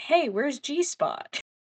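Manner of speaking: mock concerned tone. Retelling the scene where Ward asks where the cat went, imitating Ward's sincere concern. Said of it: "he says it so sincerely".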